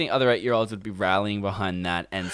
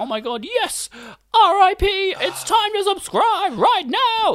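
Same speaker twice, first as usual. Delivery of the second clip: mocking, very high, very slow, drawn-out eight-year-old voice; 3 dB louder than usual. Imagining other eight-year-olds reacting, in a mocking 8-year-old voice. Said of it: "in the 8-year-old voice".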